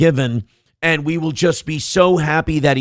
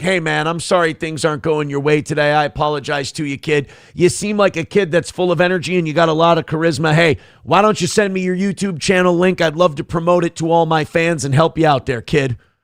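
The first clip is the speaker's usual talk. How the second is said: ordinary delivery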